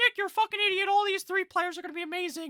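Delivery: mock, very high, loud, furious angry outburst. Imagining a viewer's comment on the video, mock-angry commenter voice. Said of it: "that's the angry voice".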